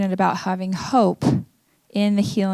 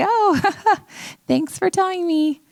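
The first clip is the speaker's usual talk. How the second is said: high, awkward laughing. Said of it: "I kinda awkwardly laughed".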